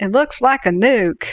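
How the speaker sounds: put-on Midwest accent, pitched high. Retelling a Vietnam vet's remark; imitating a Midwest accent. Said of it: "had this like uh, Midwest accent".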